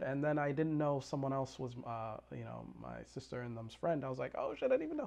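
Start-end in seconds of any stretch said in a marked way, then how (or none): 4.4-5.1 very high, sudden, shocked, surprised outburst.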